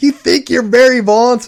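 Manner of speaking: very high, furious, out-of-control outburst. Retelling a coach who lost his temper over a bunt; retelling a furious outburst. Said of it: "He just lost it".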